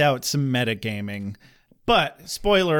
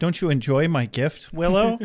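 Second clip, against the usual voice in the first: calm, matter-of-fact tone with no fuss at all; 3 semitones higher than usual. Retelling a dream scene where Buffy smothers Dawn: imitating Buffy, calm and matter-of-fact. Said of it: "Very calmly. And matter-of-factly".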